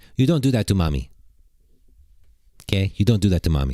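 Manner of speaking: put-on Syrian accent. A mother retells what she told her rude five-year-old, in a put-on Syrian accent. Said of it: "I'm doing my best Syrian accent".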